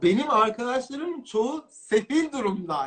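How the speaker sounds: laughing through the words. Describing a rough stretch at home, saying it while laughing. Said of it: "şu an gülerek söylüyorum".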